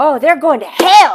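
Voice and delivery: very loud, high, careless blurt. Speaker retelling what they said before being asked to say it quieter: retelling it loud. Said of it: "I said it like, you know, loud".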